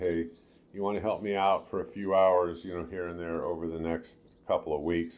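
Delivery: normal talking voice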